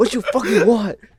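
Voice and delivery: play-acted, very high-pitched, loud, angry outburst. Retelling how Orange Man picked up the phone, imitating angry Orange Man. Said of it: "He's all mad and shit".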